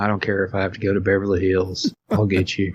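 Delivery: mock-menacing, put-on scary voice. Retelling a scene, the speaker acts out a character's threat, mock-menacing. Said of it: "that's kind of scary".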